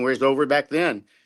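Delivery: normal talking voice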